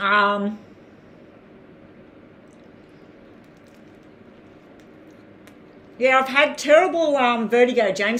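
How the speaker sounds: speaking with mouth full of food. Replying to james during a live stream, talking with mouth full. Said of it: "I've got a mouthful of uh, Vegemite toast".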